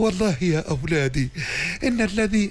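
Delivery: gentle, kindly, tender fatherly voice. Voicing a kind person speaking to his children, in a gentle, kind voice. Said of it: "انسان طيب حباب يكلم اولاده بلطف".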